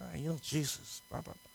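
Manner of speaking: very hushed, whispered grumbling mutter. Voicing the world around you talking about jesus: imitating whispering and grumbling. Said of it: "whispering and grumbling".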